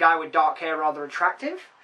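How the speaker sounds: ordinary talk, nothing marked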